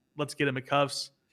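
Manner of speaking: ordinary talk, nothing marked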